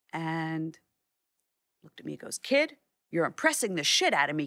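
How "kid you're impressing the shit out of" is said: very gruff put-on voice. Retelling what a man told him after looking through his contact sheets, very gruff. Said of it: "very gruff".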